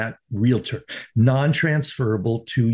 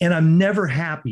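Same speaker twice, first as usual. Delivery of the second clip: ordinary talk, nothing marked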